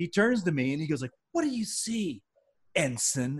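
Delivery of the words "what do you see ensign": mock angry man's voice, slow and swooping. Retelling how a fellow actor turned to question the speaker, imitating an angry man. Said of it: "It's like this angry guy".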